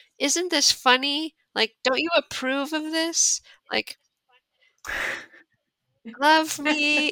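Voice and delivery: put-on very high, itty-bitty baby voice. Speaker gives voice to one-liner jokes, little tiny baby voice. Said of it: "saying in this like little tiny baby voice".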